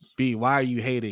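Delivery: put-on calmest, most laid-back, relaxed voice. Retelling what Jay said between the two of them: Jay's mock-calm, relaxed voice. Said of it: "Jay just in the calmest voice".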